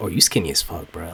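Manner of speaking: low, soft teasing voice.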